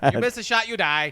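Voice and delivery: put-on cheery cartoon doctor voice. Imitating a movie leader who sounds like Doctor Nick: Doctor Nick voice. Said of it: "He sounds like Doctor Nick from The Simpsons".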